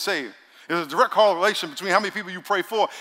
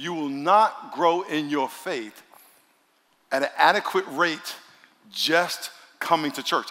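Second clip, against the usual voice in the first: very slow, deliberate, drawn out word by word; 3 semitones lower than usual. A speaker in church addressing the congregation, very slow. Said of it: "I'm going to say this really slow".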